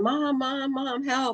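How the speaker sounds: long, high, drawn-out screams. Retelling running down the hill calling for Mom: imitating her own screaming. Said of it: "and I'm screaming".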